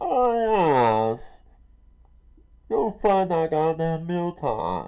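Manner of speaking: slow, swooping put-on voice, stretched swinging "oh". Joking about voicing a character himself: Bane voice. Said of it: "Bring out that Bane voice".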